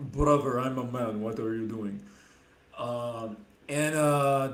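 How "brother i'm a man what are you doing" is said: put-on Russian man's accent, dropped low and deep. Retelling how a man dropped his female posing voice, deep Russian male accent. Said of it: "switched to a deep Russian male accent".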